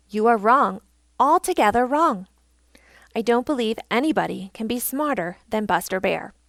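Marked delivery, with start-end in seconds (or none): none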